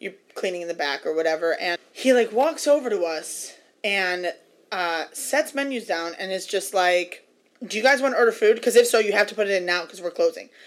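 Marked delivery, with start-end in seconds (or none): 7.6-10.4 openly rude tone of voice. Retelling what a waiter said at their table: imitating a rude waiter. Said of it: "he was so fucking rude about it".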